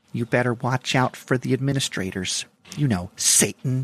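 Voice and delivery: pious churchgoing lady character voice. Closing out a podcast episode with a little bit, in Church Lady voice. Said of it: "I'm going to close it out with a little church lady".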